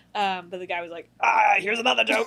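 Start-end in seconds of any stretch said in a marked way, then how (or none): 1.2-2.3 mimicked crazy, very strange man's voice, higher and louder. Retelling what a strange middle-aged man kept saying: imitating a man's crazy voice. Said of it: "had the craziest voice I've ever heard".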